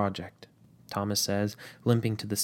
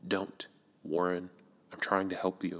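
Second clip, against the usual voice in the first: harsh, hushed half-whisper, close to the mic; 2 semitones lower, 5 dB quieter than usual. Narrating, Edward silences Warren and speaks into his ear in a harsh half-whisper. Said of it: "Edward whispers harshly".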